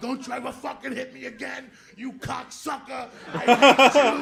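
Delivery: tearful, furious, very loud crying scream. Retelling grabbing the nun by the veil: retelling own crying outburst. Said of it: "And I'm just crying".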